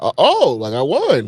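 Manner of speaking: very slow, drawn-out, dawning realization. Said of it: "she was like".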